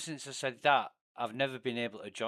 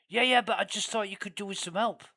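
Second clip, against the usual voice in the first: put-on raised, higher pitched northern English accent; 8 semitones higher, 5 dB louder than usual. Retelling a stranger who turned up during a game stream, in a northern English accent. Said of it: "with a northern English accent".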